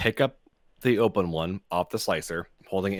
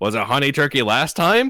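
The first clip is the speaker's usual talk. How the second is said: high, raised, snippy tone giving attitude right back; 6 semitones higher, 7 dB louder than usual. Retelling a reply to a customer at the deli counter: giving attitude back. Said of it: "giving her attitude back".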